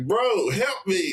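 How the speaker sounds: mock shrill, very high-pitched yell. Retelling calling out to a boy hiding behind a book, retelling yelling for help. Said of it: "I'm sitting there yelling for Kyle to help me".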